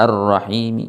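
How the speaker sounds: word-final vowel said softly, faintly. Demonstrating ar-rom reading when stopping, soft, faint final vowel. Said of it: "suaranya pelan ya, suaranya kecil".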